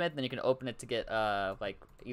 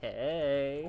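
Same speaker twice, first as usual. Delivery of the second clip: mock, imitated flirtatious tone. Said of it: "Why do you say that so flirtatiously?".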